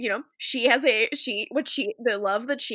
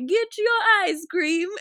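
put-on high old Italian man voice, hawker style; 8 semitones higher, 3 dB louder than usual. Retelling a comedy bit about an ice cream seller: imitating John Mulaney's old Italian man. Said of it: "he's selling ice cream as an old Italian man".

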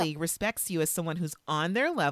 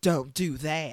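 put-on Texan accent, lower and slower; 3 semitones lower than usual. Retelling a scene, speaker quotes a man's reply to a woman's question, Texas accent. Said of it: "So we have like a Texas accent on".

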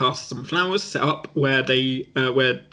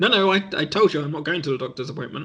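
ordinary delivery

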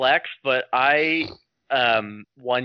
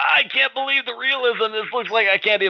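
put-on very high, amazed, old-timey voice. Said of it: "they're like".

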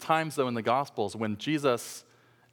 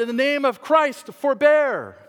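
very loud, very high, slow, drawn-out cry; 12 semitones higher, 9 dB louder than usual. Retelling a protester in the arena crying out: imitating a shout at the top of his lungs. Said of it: "at the top of his lungs, he shouted".

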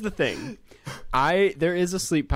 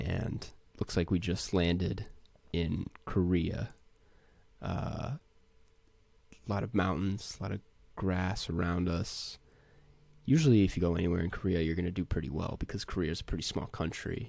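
put-on commentator voice, low, soft and pitched down; 5 semitones lower, 7 dB quieter than usual. Showing the voice used while playing GeoGuessr: pitched-down voice. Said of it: "I'd pitch it down a little bit. I'd start talking like this".

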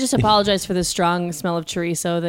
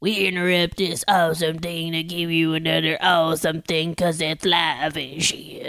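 put-on grumbly voice; 2 semitones lower than usual. Imitating the announcement heard when the stream goes live: grumbly voice. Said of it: "hear a grumbly voice go".

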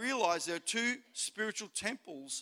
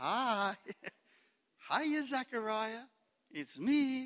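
very slow, seductive, alluring woman's voice; 3 semitones higher than usual. Acting out Wickedness popping up from the basket to greet Zechariah: seductive woman's voice. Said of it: "It's always dressed up to be seductive".

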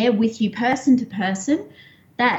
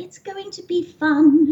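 put-on higher child's princess voice; 7 semitones higher than usual. Retelling how the child answered in the exercise as the princess: imitating a child's princess voice. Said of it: "she was the princess".

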